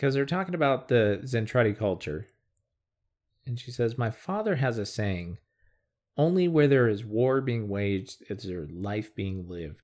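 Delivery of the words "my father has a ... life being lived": ordinary talk, nothing marked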